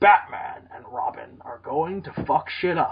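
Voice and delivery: movie trailer narrator voice, blockbuster style. Imitating a trailer narrator who once voiced Optimus Prime: Optimus Prime voice. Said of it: "Optimus Prime".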